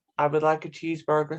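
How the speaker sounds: put-on American accent, plain talking. Ordering a cheeseburger, the speaker uses an imitated American accent. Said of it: "American accent, yeah".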